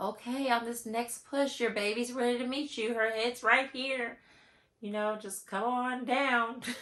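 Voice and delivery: sweet, high, angelic coaxing voice. Retelling a birth story, quoting the midwife: imitating a sweet angelic voice. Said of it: "the midwife in her sweet angelic voice was like".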